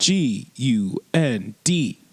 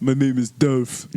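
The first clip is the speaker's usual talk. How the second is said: put-on dopey voice. Speaker inventing a person introducing himself, dopey Dolph voice. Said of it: "he sounds really dopey".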